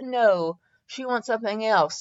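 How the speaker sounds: ordinary delivery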